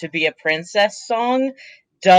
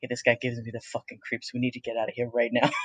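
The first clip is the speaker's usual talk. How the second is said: very quiet, low, hushed mutter; 7 semitones lower, 12 dB quieter than usual. In a game scene, a character turns back to a companion; very quietly. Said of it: "very quietly".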